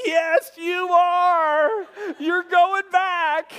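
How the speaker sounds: acted laughing through words. Retelling the reply to a man screaming in the truck, retelling laughing while talking. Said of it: "I just start busting out laughing".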